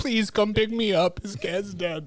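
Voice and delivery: acted-out sobbing, terrified, tearful voice. Retelling a girl's voicemail asking a friend for pickup: imitating a terrified crying girl. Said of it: "the terror and the sadness in her voice as she's crying".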